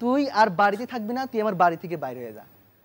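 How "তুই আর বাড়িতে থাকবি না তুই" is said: plain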